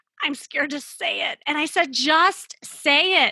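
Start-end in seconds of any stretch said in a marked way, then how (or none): 0.2-1.4 put-on gasp, much higher. Recounting how a woman answered when pressed to come clean, retelling her gasped reply. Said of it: "she said in a gasp".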